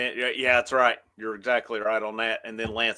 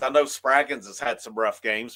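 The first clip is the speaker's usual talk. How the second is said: plain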